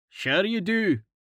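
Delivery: dry, mocking sarcasm. Starvo responds to Karten in front of the group, sarcastically. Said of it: "Starvo said sarcastically".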